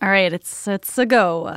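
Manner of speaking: put-on Italian accent. At the end of a podcast episode, a host speaks in an Italian accent. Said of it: "Nice Italian accent".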